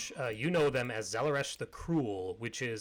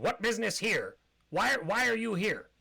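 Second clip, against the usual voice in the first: pitched-up kobold creature voice; 8 semitones higher than usual. Voicing a kobold on a balcony questioning the party: kobold voice. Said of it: "and then he says".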